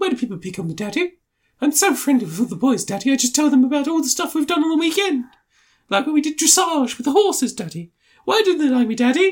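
put-on very high posh rich-kid voice. Mocking a rich kid who asks his daddy why he's picked on: imitating a posh kid. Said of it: "He's the kind of kid who'd go to school and he'd be like".

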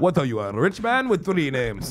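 sing-song put-on Bengali accent. Joking about a guest's single name: Bengali accent. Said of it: "That was the perfect Bengali accent".

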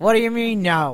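put-on Yiddish-inflected accent.

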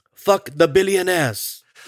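belted-out hero voice. After asking listeners for five-star reviews: T'Challa impression. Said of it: "That's my best T'Challa".

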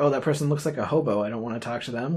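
normal talking voice

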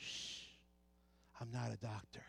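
slow, hushed whisper, very close to the ear. Retelling a whispered line during pretend doctor play: imitating a whisper. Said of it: "she whispers in my ear".

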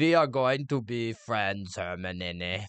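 slow, silly, terrible fake put-on Bulgarian accent. Imitating how a character sounds in her head: imitating Viktor Krum's silly accent. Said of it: "He just has a silly accent in my head".

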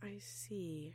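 muttered. Answering a remark about the returned dead's smell, muttered. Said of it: "Rachel muttered".

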